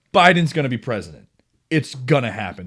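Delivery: ordinary delivery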